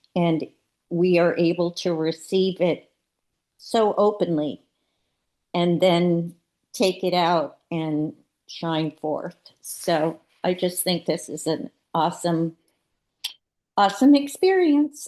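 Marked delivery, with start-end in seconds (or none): 9.6-15.0 voice quivering and trembling all the way through. Speaking to a gathered group, with a shaky voice. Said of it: "I don't know why my voice is shaky".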